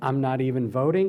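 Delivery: normal talking voice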